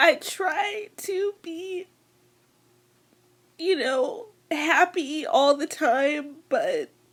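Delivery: speaking through tears. Speaker addressing viewers in a video, crying. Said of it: "I'm crying".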